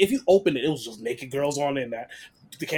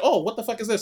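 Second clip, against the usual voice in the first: pitched-up mocking caricature voice; 7 semitones higher than usual.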